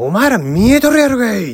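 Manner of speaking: high-pitched, snapping, furious angry yell. Retelling snapping at a group of people after shouting at them to wait, retelling snapping at them. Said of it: "プチンって僕の方が来てしまって".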